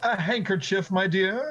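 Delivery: contemptuous, sneering, scornful voice. Voicing a guard questioning a player's claim: guard sneering. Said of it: "one of the guards sneers at you".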